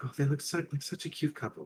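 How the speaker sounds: high, soft murmur under the breath. Voicing a gnome as the others walk away: murmuring under her breath. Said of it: "you do hear the gnome murmur under her breath".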